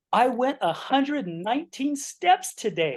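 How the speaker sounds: thrilled, very high, swooping sing-song excitement. Describing a show's character in its episodes, imitating an excited voice. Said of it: "so excited".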